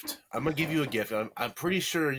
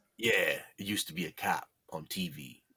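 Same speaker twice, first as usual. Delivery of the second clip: very low, slow, drawn-out voice; 8 semitones lower, 3 dB quieter than usual. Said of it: "my [name] impression".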